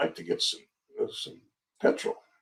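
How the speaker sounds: put-on whispered broken English with German accent. Retelling a man in uniform asking for petrol: broken english, german accent. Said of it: "in broken English, like German accent".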